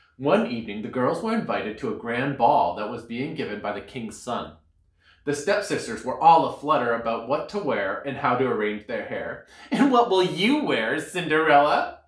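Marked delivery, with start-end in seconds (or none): 9.7-11.9 playfully cruel, teasing, mocking tone. The stepsisters ask Cinderella about the king's son's ball, teasing. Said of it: "they teased".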